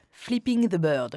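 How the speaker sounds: showy, overdone, exaggerated English accent. Repeating the english phrase when asked to speak english again: showy english accent. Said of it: "quel accent".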